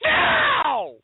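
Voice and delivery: put-on very high, loud, bratty, demanding baby-like shrieking cry.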